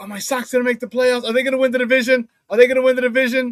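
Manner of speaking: nervous, anxious voice. Retelling what an anxious sports fan asked: imitating a nervous, anxious fan. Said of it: "paranoid, traumatized Sox fan".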